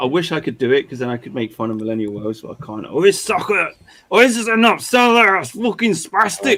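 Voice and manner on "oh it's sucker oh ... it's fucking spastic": clumsy, bad Scottish accent, pitched high. Attempting a scottish accent to mock someone, bad scottish accent. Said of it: "I'm trying to do my Scottish accent".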